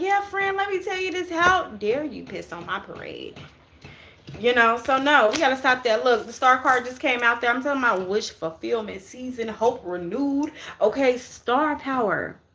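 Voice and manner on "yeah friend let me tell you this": mock very high, rushed, eager, all-excited gush. Acting out telling a friend about a goal, imitating own excited telling. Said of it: "I'm all excited".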